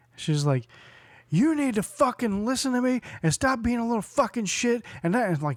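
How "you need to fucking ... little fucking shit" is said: high-pitched screaming. Retelling a mother at a skate park screaming at her son: imitating a mother screaming. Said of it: "screams at her son".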